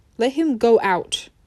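ordinary delivery

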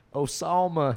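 terrible fake southern accent. Retelling a friend's terrible southern-accent riff on the line: imitating a terrible southern accent. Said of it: "picturing a dude with a southern accent".

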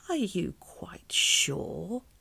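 rough, slow, creaky, doubting, suspicious croak. Miss Itch questions Jenny again after Jenny's answer, croaked suspiciously. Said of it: "croaked Miss Itch suspiciously".

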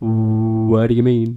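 slow, long-held first syllable of what. Imitating how he talks when confused: drawn-out first word 'what'. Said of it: "He holds on to the first syllable of the first word that he says".

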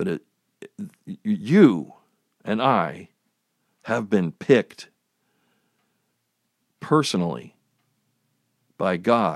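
speaking very slowly. Addressing fellow Christians, deliberately speaking really slow. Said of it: "I'm saying this really slow".

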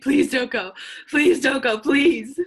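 put-on sobbing, tearful, pleading voice. Retelling a show scene, a woman begging on her knees: imitating a crying plea. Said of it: "she gets on her knees and starts grabbing his legs".

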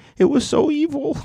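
very high, whiny voice. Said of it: "I'm not gonna read it in a whiny voice".

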